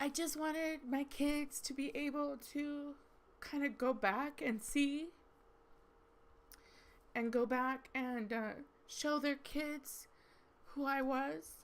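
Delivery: talking through tears. Speaker apologizing for crying while explaining why they did YouTube, crying while talking. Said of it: "yes, I'm crying".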